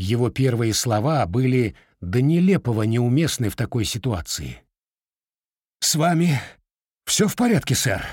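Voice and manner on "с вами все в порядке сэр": breathing heavily, out of breath. The sergeant rushes into the room and asks after the gentleman, breathing heavily. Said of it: "тяжело дыша спросил он".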